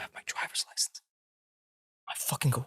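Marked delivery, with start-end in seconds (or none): 0.0-1.0 near-whispered, kept very low-key. Retelling a friend's quiet admission about his license: imitating someone saying it low key. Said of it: "just really low key".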